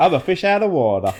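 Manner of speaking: put-on Texan twang. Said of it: "That was my Texan".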